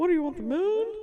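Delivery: put-on squeaky voice. Attempting a Jimmy Stewart line, failing: bad Jimmy Stewart impression. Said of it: "I sound like Mickey Mouse".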